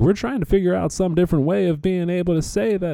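put-on Southern accent, pitched very high. Imitating what a payment service says: southern accent. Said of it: "I don't know why I'm doing that voice".

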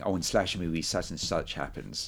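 normal talking voice

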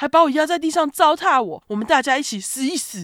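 mock, very high-pitched, loud drunken ranting yell. Retelling a story of an uncle carrying a gas tank to the gate, mock drunken shouting. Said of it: "用着充满酒气的声音大喊".

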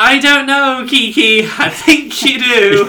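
slow, drawn-out, high-pitched exasperated yell. Retelling how a man yelled at someone to quit her job; retelling an exasperated yell. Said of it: "I didn't mean to yell".

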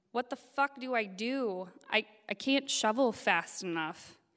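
put-on, mild, drawn-out, desperate half-shouted yell. Retelling calling down to friends in a storm: retelling a scream. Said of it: "screaming over the roar of the wind".

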